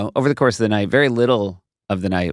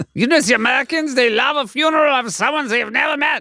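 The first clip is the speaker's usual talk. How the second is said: put-on Swiss German accent, pitched high. Imitating swiss townspeople talking about american tourists: swiss german accent. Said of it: "That's your Swiss, that's your Swiss German".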